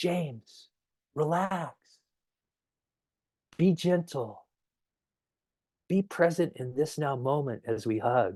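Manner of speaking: soft, hushed, close-in-the-ear stage whisper. Retelling what a tall friend half-whispered in his ear during a hug, half-whispering. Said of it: "he whispers in my ear".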